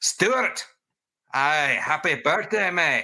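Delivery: put-on Glaswegian accent. Told fans weren't buying the accent, the speaker tries again in a glaswegian accent. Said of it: "closest to a glaswegian accent".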